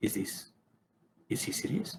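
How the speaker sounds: whispered mutter under the breath, barely audible. Voicing a character who mutters a reaction under his breath. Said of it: "And under his breath".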